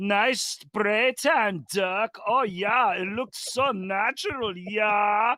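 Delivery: put-on odd, strange-sounding German accent, high and slow. Retelling taunting a Dallas Mavericks player all game, in a weird German accent. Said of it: "I was doing this weird German accent".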